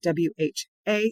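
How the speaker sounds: stress on the letter A. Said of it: "I emphasize the A".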